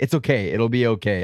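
ordinary delivery

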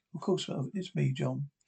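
plain reading voice

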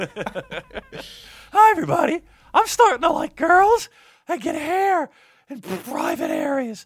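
very high, loud, cracking voice. Your voice has just cracked, so you greet everybody in a cracking Peter Brady voice. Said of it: "I'm Peter Brady".

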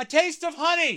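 very high, loud shouted-out yell. Retelling someone in the audience yelling out at a show. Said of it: "and someone would yell out".

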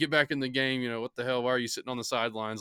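quick, urging yelling, rattled off fast. Recalling his dad yelling at him during a football game, imitating dad yelling. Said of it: "he's yelling".

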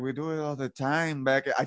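put-on aggrieved, griping, complaining character voice. Retelling how he got called to the principal's office, quoting his complaint: imitating him complaining. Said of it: "I feel like I'm not allowed to do that voice".

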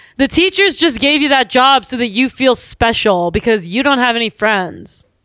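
usual speaking voice

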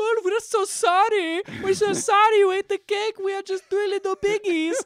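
put-on very high, loud squeal in German accent. Speaker tells a birthday-cake story, voicing the Three Little Pigs in a German accent. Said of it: "What was that accent?".

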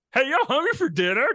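pitched way up and belted out. Retelling a dodge of an awkward question from kids: Fozzie Bear voice. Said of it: "Talking like Fozzie Bear".

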